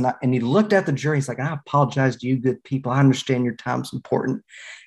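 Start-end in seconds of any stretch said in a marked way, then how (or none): 1.4-4.4 put-on easygoing, smooth-talking Arkansas accent, apologetic tone. Retelling a man in court apologizing to the jury, in a smooth Arkansas accent. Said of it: "Arkansas accent to the extent there is one".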